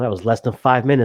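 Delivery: ordinary delivery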